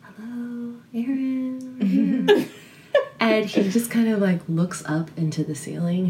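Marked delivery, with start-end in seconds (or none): 0.0-2.5 whispered, slightly higher pitch. Retelling walking into a shop with a friend, retelling a whispered hello. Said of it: "I kind of just whispered".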